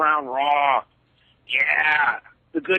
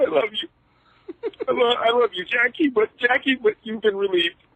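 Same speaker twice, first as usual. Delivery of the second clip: put-on fake crying, higher pitched; 7 semitones higher than usual. Calling in, imitating Shane McMahon losing his company: imitating Shane McMahon crying. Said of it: "He's crying about his company being taken".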